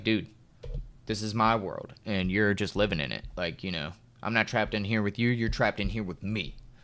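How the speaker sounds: normal talking voice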